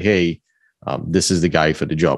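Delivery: plain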